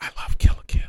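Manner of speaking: hushed whisper. Confessing a love of an anime to the others: whispering. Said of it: "I'm whispering that".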